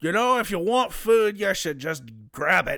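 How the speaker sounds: character voice spoken with a full mouth. Narrator voices the player's sister speaking as they walk out, talking with mouth full. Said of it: "with a mouthful of food".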